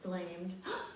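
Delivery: plain reading voice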